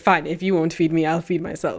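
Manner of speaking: dramatic, put-upon, entitled pet voice. Voicing a hungry pet who eats plastic: Bustella's voice. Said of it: "that's Bustella's voice".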